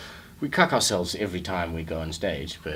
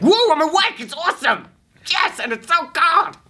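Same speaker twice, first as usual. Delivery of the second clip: mock, very loud, very high, hyped cheer; 12 dB louder than usual. Acting out how they force morning energy: imitating own hyped morning energy. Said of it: "So I have to be like".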